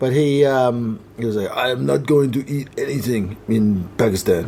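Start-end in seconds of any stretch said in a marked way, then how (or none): 1.5-4.5 put-on French accent on English words. Retelling what a french travel companion said, the speaker does a french accent. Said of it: "don't be offended if I do the accent".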